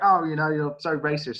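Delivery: ordinary talk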